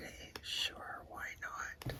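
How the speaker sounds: whispering. Mid-demonstration, the speaker makes a quick aside, whispering. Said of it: "I don't know why I'm whispering".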